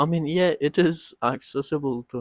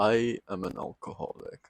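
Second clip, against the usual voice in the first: low, soft, deep put-on Mexican accent; 4 semitones lower, 6 dB quieter than usual. Retelling what a man said while looking the speaker in the eyes, deep Mexican accent. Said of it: "in his deep Mexican voice said".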